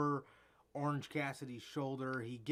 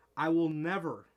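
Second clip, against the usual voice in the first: "never" hit hard and heavily emphasized; 2 semitones higher, 8 dB louder than usual. Speaker says he emphasizes one word in a vow: stress on never. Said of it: "I emphasize that word".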